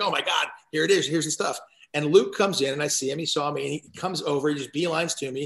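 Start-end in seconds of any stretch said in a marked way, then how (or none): none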